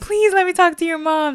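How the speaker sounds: crying, high, tearful, begging tone. Retelling a frightened phone call to a friend, imitating own past crying plea. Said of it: "I started crying".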